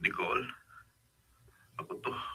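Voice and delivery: tearful voice. On the phone, a man tells the person answering that it's him, crying voice. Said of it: "bakit ganyan ang boses mo? Umiiyak ka ba?".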